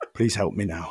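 gravelly confiding voice. Reintroducing himself as if at an AA meeting: gravelly AA-meeting voice. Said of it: "with the gravelly voice".

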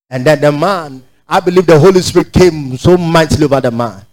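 usual speaking voice

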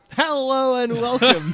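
loud radio announcer voice. Asked for a real radio voice, the speaker opens in a radio announcer voice. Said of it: "want a real radio voice out of you".

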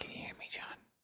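whispering very quietly. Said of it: "keep getting lower until the audience can't hear us".

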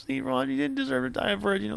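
put-on drunk voice. Retelling someone drinking on the beach at his bar; imitating a drunk. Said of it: "all drunk".

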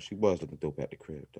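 voice brought way down.

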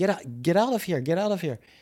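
imitated stern, harsh yelling voice. Retelling how a man from the booth yelled at him: imitating yelling. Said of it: "yell at me".

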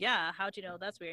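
ordinary talk

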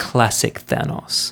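hushed, breathy whisper. Retelling what a boy in a quiet cinema said: whispering. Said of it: "and whispers".

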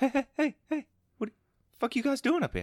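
put-on very high, stammering Boston accent. Showing how to do the actor's accent, stuttering: Mark Wahlberg Boston accent. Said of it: "The Boston".

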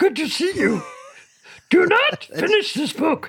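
very high-pitched cartoon puppet monster voice. Performing what he says to the speaker, in a Grover voice. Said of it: "Is that Cookie Monster or Yoda?".

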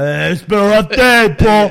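put-on New York accent. Retelling acting drunk at a pretend bar: put-on New York accent. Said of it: "with a New York accent".

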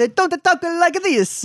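mock Italian accent, high-pitched, slow, laid on thick.

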